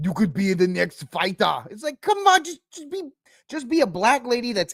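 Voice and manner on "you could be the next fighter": English spoken with a put-on Russian accent. Contrasting someone's terrible accent, the speaker shows a put-on russian accent. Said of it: "Her accent didn't sound like this".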